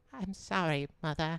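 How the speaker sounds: put-on sickly, small, soft, weak boy's voice. Imagining a sick friend as a bedridden kid of the fifteen hundreds: imitating Devin as a sickly child. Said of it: "He's like".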